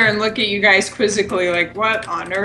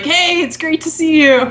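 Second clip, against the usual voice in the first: high, welcoming, glad-to-see-you tone; 7 semitones higher, 4 dB louder than usual. Coming over to hug someone in the middle of their task, big-hug greeting. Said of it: "give you a big hug and be like".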